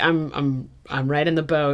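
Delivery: normal talking voice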